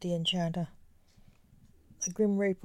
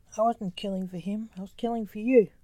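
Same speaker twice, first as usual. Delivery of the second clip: ordinary delivery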